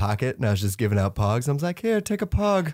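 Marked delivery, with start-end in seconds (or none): 1.8-2.7 very high, squeaky voice. Retelling giving out pogs dressed as Pee-wee: Pee-wee Herman voice. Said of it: "you do the voice and everything".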